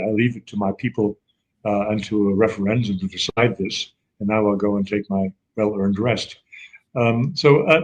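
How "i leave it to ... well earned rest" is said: ordinary talk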